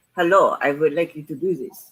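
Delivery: failed put-on German accent. Retelling how a game character talked to the players: bad German accent. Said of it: "I told you I can't do".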